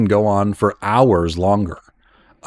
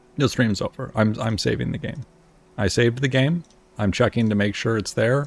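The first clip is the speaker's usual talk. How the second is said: normal talking voice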